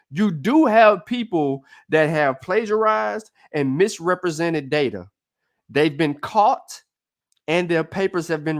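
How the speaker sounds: very slow, deliberate, drawn out word by word. Speaker stresses a point in a discussion, saying it real slow. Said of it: "I'm gonna say this real slow".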